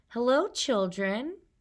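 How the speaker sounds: sweet, sweetly spoken voice. A narrator reads someone greeting a class of discouraged children, in a sweet voice. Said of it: "said in a sweet voice".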